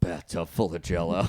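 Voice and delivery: imitated deep gravelly male tone. Act out a man who took it very seriously, imitating his full-gravel tone. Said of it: "just full gravel in his tone too".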